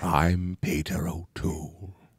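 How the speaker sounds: very low, hushed, soft voice. Asked to do his impression now, speaker picks a Peter O'Toole impression. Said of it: "I could do it as Peter O'Toole".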